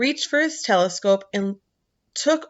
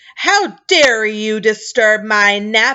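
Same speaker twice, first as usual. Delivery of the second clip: slow, furious, enraged roaring bellow of a giant; 6 dB louder than usual. Reading a story aloud, an enormous figure addresses Milo, bellowing furiously. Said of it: "he bellowed furiously".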